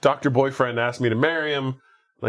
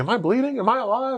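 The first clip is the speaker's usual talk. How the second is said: mock very high, unhinged, frantic babbling; 11 semitones higher than usual. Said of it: "he's acting pretty crazy".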